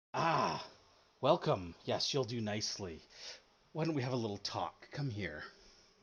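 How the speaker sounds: charming, enticing voice. Voicing a character who tries to charm a player: charming, enticing voice. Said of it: "as she tries to charm you".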